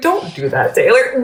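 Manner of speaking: put-on gentle, kind, patient tone. Retelling being gently stopped mid-outburst: imitating Kylan, kind and patient. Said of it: "Literally so kind and so patient".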